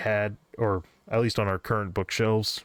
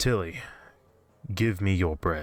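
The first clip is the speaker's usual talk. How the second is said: whispery voice, slower. Narrating a story as an unseen voice speaks from the bushes, whispery voice. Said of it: "a whispery voice came out of the bushes".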